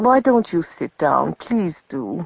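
kindly, soft, gentle, practical tone. A woman invites a man who looks at her piteously to sit, said kindly. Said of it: "Her face was kind, but she was practical, too".

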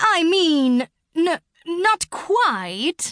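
halting, very slow, high stammer. After Dawn clears her throat, the sugar glider answers the pangolin, stammering. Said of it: "the sugar glider stammered".

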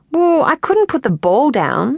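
irritated. A girl teased by another girl about playing in her undies, retorting. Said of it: "she retorted".

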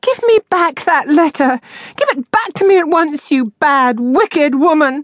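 crying out, very high-pitched. A woman who cannot get out of bed, to her landlady, crying out. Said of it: "cried Miss Moss".

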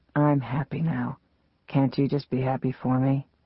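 speaking very softly, softest voice. A man addresses the narrator in his softest voice ever. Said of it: "he said in his softest voice ever".

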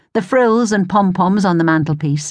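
plain reading voice

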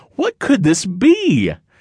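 high, scared, frightened cry. A character, stepping up to the mirror to see, cries out in fear. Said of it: "he cried".

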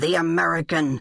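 menacing growl from the throat. Reading a novel aloud, voicing a man who has pinned a woman, growled. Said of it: "he growled".

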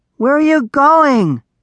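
very high, high-pitched shouted yell. Narrator reads a character calling after a little dragon that turned back, yelling. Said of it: "yelled Darek".

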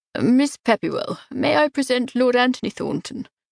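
ordinary delivery

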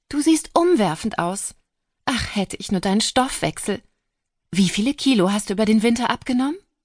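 effusive, overflowing, high gushing exultation. Narrating as Andrea Payne rushes up to greet a trapped Riley: gushing Andrea Payne.

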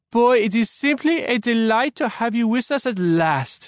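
put-on very high, thick, laid-on French accent. Narrator reads the wife's line after her husband introduces her, even thicker French accent. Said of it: "she said in an even thicker French accent".

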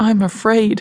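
hushed whisper. A son speaks to his mother, whispered. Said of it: "he whispered".

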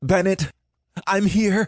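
high, shouted call, yelling out. Holding a branch in the river current, the narrator calls to a drifting man, shouting. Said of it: "I shouted".

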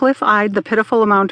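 ordinary delivery, nothing marked

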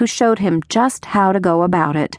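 ordinary delivery, nothing marked

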